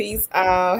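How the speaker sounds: ordinary delivery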